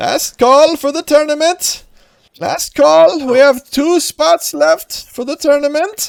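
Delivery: put-on very high, loud, drawn-out calling-out in old man voice. Voicing an old guy the players hear in the crowd: old guy yelling out. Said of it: "you guys hear an old guy kinda yelling out".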